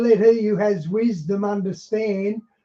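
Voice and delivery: ordinary talk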